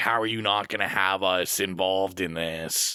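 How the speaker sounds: normal talking voice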